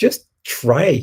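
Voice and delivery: annoyed voice. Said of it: "I got really annoyed with them".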